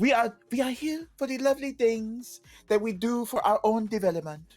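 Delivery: fake French accent. Imitating Yves Guillemot from a quote: heightened French accent imitating Yves Guillemot. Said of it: "it is heightened French".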